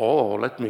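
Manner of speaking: put-on deep voice like an old creature. Trying an old person's voice for curious kids, Yoda voice. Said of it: "that's Yoda".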